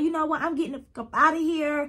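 fake upset ranting. Telling y'all how Raven reacted to the tryout, retelling Raven screaming. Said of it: "she starts screaming, and she's like".

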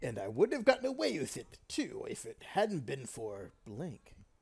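put-on cartoon villain voice. Quoting a cartoon villain's line in a Scooby-Doo villain voice. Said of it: "Tried to do my best Scooby-Doo villain voice".

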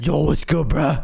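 menacing, rough, gravelly, creaky scary voice. Giving the bear on someone's head a voice of its own, in a scary voice. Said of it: "He kind of has a scary voice".

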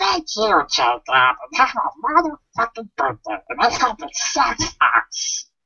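put-on character voice pitched very high. Speaking for the absent Penguin, thanking Jacob, in the Penguin voice. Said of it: "you want me to do the Penguin voice".

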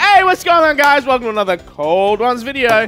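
hyped, energetic vlogger-style delivery. Asked to shout the video intro like the camera, a shouted YouTube intro. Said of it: "say it like you're shouting the intro".

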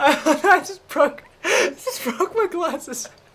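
very high, slow speech broken by laughter. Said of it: "Why are you laughing so hard?".

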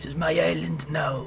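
put-on Norse Viking warrior accent. A speaker plays a character in his Viking voice. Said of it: "that's my Viking voice".

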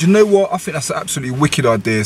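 ordinary delivery

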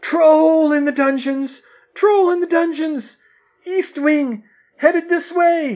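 shrill, very high, very loud scream at full volume. Reading a story, a man bursts into the great hall and runs to the headmaster: screaming.

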